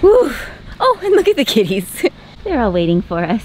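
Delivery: breathless, catching breath between words. Speaker greeting the kitties waiting for them, out of breath. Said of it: "I gotta catch my breath".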